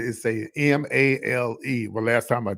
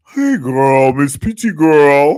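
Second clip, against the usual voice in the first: put-on very loud, very slow New York accent, "girl" stretched; 2 semitones higher, 10 dB louder than usual. Retelling how a caller from New York greets her: imitating a New York caller. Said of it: "And this how they really sound".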